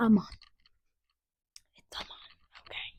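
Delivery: crying, tearful, kinder, nicer tone. Retelling a movie scene where a woman corrects a name: imitating someone crying. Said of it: "she's, like, crying, and she's like".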